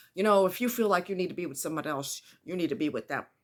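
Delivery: play-acted snippy, sassy delivery full of attitude. Retelling what the second husband said: imitating someone saying it with attitude. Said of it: "he said with an attitude".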